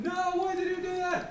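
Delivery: loud, high, panicked, freaking-out outburst.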